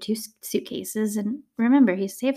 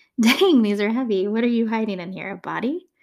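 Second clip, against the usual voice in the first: mock playful, joking, teasing tone; 4 dB louder than usual. Retelling the taxi driver loading his passenger's heavy suitcases, retelling a joking question. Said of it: "he's jokingly asking Issei".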